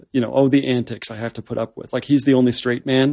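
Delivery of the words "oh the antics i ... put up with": ordinary delivery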